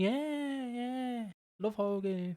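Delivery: put-on very slow bored voice. Imitating how Nash sounds when he is not interested: mock-bored Nash impression. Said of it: "when he's not interested, he just does that voice".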